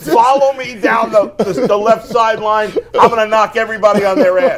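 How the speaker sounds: cocky, swaggering tone. Retelling own play call in a flag football huddle: retelling own cocky talk. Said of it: "I'm getting cocky now".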